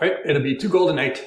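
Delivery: put-on Scottish accent. Voicing the character a player asks for rooms, quoting the price: scottish accent. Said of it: "I'll just make her Scottish".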